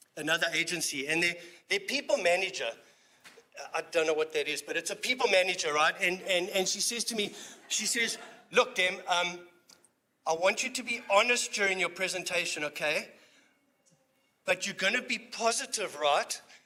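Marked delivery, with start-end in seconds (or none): none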